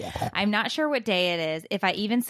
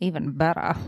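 mock sexy, fake seductive voice. Joking back after another speaker says triple X: mock sexy voice. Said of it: "Was that your sexy voice?".

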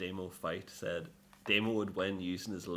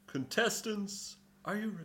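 put-on TV game show announcer voice, higher; 13 semitones higher than usual. Comparing a fight announcer to a TV show: Gladiators announcer voice. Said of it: "That sounded like Gladiators".

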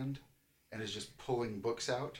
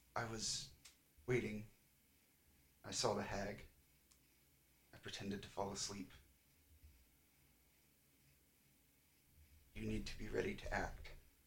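very soft, faint, hushed voice close to the ear; 7 dB quieter than usual. Voicing a character speaking softly into a listener's ear: very soft voice. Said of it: "you hear Kaleza's voice very, very softly".

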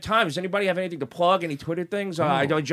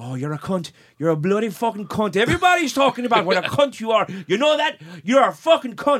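horrible put-on Irish accent; 4 semitones higher than usual. Retelling a quarrel over money, the speaker voices Jerry in a horrible Irish accent. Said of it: "my horrible Irish accent".

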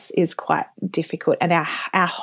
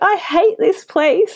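put-on crying voice, higher pitch; 13 semitones higher, 4 dB louder than usual. Retelling crying on the living room floor after moving.

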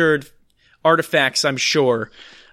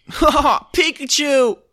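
put-on cartoon boy's laugh, higher pitched; 9 semitones higher than usual. Doing an impression of Ash laughing as things happen around him. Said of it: "you're just gonna do his laugh".

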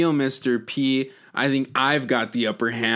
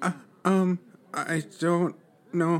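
scared, trembling voice, higher; 6 semitones higher, 3 dB quieter than usual. Stammering in a skit scene after being splashed with blood: shaking in her boots. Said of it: "Sydney's just shaking in her boots right there".

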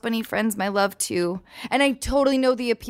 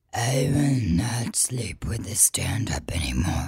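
spooky, slow, drawn-out, creepy put-on voice; 13 semitones lower, 3 dB quieter than usual. Trying the line again after a first attempt, in a scary voice. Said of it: "it's scary that".

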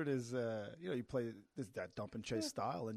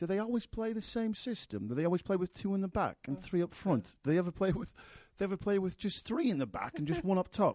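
put-on English accent, pitched higher; 7 semitones higher, 5 dB louder than usual. Speaker acts out what one guy asked, imitating an english accent. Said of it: "That's actually very good English accent".

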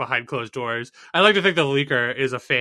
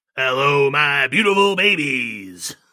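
strange acted announcer voice; 4 dB louder than usual. Greeting the podcast audience in a put-on weird voice. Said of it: "he did a weird voice for his "Hello, beautiful babies."".

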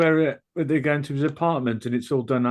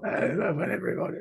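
gruff, put-on blokey voice; 4 semitones higher, 5 dB quieter than usual. Imitating an actress whose voice is now gruff: Kathleen Turner gruff voice. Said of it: "But her voice in that is how her voice is now. It's like".

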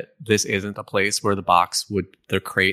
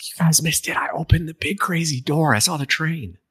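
excited, buzzing stage whisper, pitched up; 7 semitones higher than usual. Sneaking up behind two companions to share news: excited half-whisper. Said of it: "whispering really excited".

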